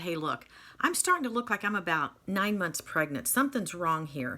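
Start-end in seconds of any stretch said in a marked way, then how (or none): none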